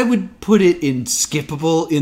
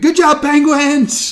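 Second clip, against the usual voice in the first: very high, loud screeching cheer; 11 semitones higher, 5 dB louder than usual. Recalling a favourite moment from the show: Kermit screaming. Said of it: "Kermit screaming".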